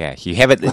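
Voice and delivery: normal talking voice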